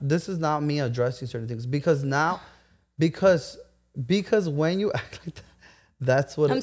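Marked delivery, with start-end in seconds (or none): 4.1-6.6 words broken up by laughter. Explaining to a friend why they felt disrespected: laughing while talking. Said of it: "I know I'm laughing 'cause you're laughing".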